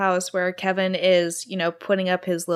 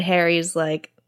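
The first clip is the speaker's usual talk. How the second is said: plain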